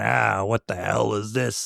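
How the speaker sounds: low, deep, gruff, rough voice. Retelling a film bit: gruff Buck Flower voice. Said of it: "he's gruff".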